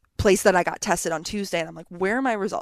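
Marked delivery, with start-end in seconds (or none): none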